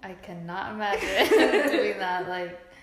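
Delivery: loud laughing shout.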